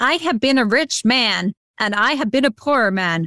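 borrowed American accent. Quoting a film line for others to guess: American accent. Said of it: "My American accent".

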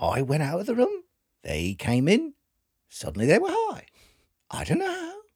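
put-on Australian accent with swooping pitch. Imagining what australian parents would say, in a put-on australian accent. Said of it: "You're usually pretty good at Australian".

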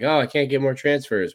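put-on blubbering crybaby moan, high and crying. Mocking coaches who complain about losing transfers: mock crying. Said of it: "now you're crying like".

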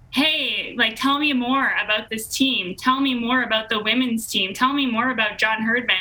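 usual speaking voice

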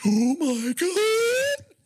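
very high words gasped on the in-breath. Describing a zombie movie scene, act out the man imitating speech on inhaled breath. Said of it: "he says it with the breath going in".

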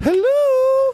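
put-on very high, exaggerated, hammed-up woman's voice. In a comedy bit, saying hello in the Tootsie woman voice. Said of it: "I have to do the Tootsie woman, you know? ... I know women don't sound like that".

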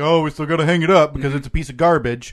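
plain

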